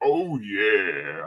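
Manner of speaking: very deep voice, "yeah" stretched long. Imitating a mascot's catchphrase: Kool-Aid Man voice. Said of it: "like a Kool-Aid man".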